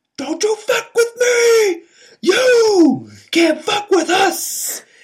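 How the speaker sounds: put-on screaming voice. Retelling a stranger's outburst on the street: imitating someone screaming. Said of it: "someone starts screaming".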